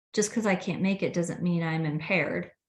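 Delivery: ordinary delivery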